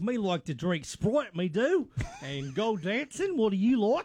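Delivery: decent put-on New Zealand Kiwi accent. Describing dating-show couples in new zealand, imitating them in a new zealand accent. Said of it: "That's not a bad New Zealand accent".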